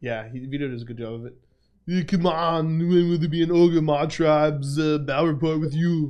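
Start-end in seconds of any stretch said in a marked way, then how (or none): 1.9-6.1 German accent, barked out. Reading a viewer question aloud after being asked: shouting angry Schwarzenegger accent. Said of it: "Read this in a shouting, angry German Schwarzenegger accent".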